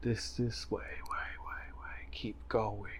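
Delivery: very quiet, faint, otherworldly echoing voice. Narrator voicing an echo the player hears in a thick mass, ethereal voice. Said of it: "an ethereal voice".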